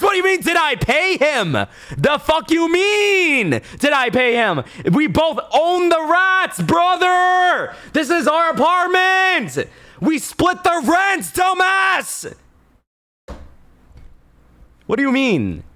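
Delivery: very high, furious, mean, drawn-out angry rant. Retelling an argument with a roommate over the rats, retelling an angry yell. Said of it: "Why are you yelling?".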